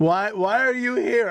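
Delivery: play-acted haughty, stuck-up, high, slow snobbish tone. Retelling own past reaction to traffic and crowds: imitating own snobby tone. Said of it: "I was so snobby".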